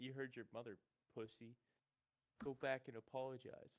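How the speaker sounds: quiet whisper, just loud enough to hear. A player's character whispers to another character, whispering just loud enough to be heard. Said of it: "Can Thud whisper towards Jack".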